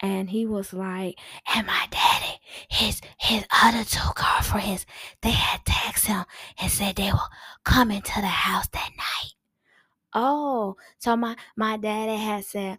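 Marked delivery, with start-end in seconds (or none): 1.5-9.3 loud, breathy whisper, mostly blown air. Telling an adult a secret while standing right beside them: failed attempt at whispering. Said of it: "thinking he's whispering, he's actually just blowing next to me".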